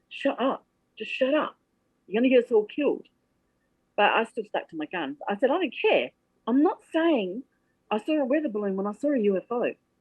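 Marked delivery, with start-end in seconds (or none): 0.1-3.0 mock whisper under breath, hushed, much higher. Retelling what a man with him kept muttering, retold whisper under breath. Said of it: "just whispering it under his breath".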